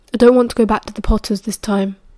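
ordinary delivery

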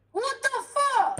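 shrieking, very high-pitched screaming outburst. Reacting to hearing someone is getting a hyper shift back: screaming. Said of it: "Stop screaming".

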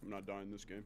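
very quiet, low, hushed, straight-faced deadpan. Retelling a teammate's words: imitating a straight-faced boast. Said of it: "you could hear the shift in his voice".

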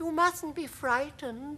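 gentle, kindly, reassuring tone, very high pitch. The ladybird speaks to James, who finds the creatures terrifying: said kindly. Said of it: "the ladybird said kindly".

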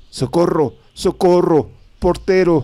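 very high, shrill screaming at full force. Someone running down the stairs and slamming doors calls for help, shouting with all their might. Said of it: "gritando con todas sus fuerzas".

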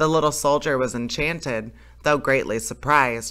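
plain

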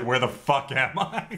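normal talking voice

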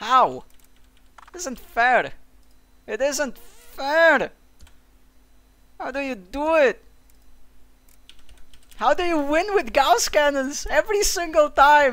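very loud, drawn-out, exasperated frustrated shout. Losing a game against gauss cannons, shouting in frustration. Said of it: "I need to stop shouting".

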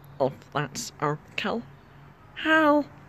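high cartoonish alien voice. Greeting everybody for the holidays in a Stitch voice. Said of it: "when I do this voice".

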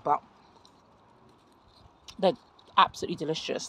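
talking with mouth full. Speaker tasting blueberries, talking with mouth full. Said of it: "I know I shouldn't speak with my mouth full".

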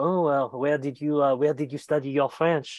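haughty, condescending, snooty Parisian tone. Imitating a parisian who notices a southern accent: imitating a snobby parisian. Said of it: "which will be noticed by the snobby Parisians".

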